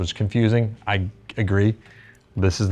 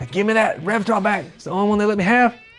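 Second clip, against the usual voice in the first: put-on high-pitched Louisiana accent; 13 semitones higher than usual. Imitating a rep who took back a guitar: imitating a louisiana rep's voice. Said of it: "He talks like this".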